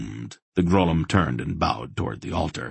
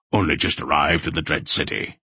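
usual speaking voice

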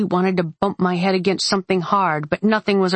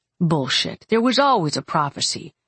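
plain reading voice

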